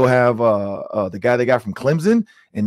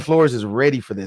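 ordinary talk

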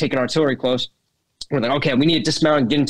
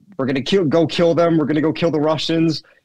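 acted-out shout, called out only lightly; 3 semitones higher than usual. Retelling what the guy shouted while driving to the front: imitating someone shouting. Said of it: "the guy starts shouting".

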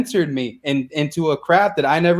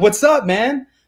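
play-acted, bursting, amped-up, high-energy, pitched up; 5 semitones higher than usual. Describing coming in to a seller with all this energy, acting out high energy. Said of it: "came in with all this energy".

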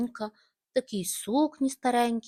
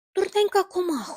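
sudden, high, scolding exclamation; 9 semitones higher, 4 dB louder than usual. Zhulin sees an insect fall into his pickle jar, exclaiming. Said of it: "вигукнув Жулін".

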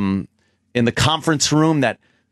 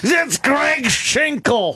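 pitched-up, casual, friendly voice; 12 semitones higher than usual. Imitating Jim saying a name he read in a video: imitating Jim. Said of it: "all I'm thinking is Jim going".

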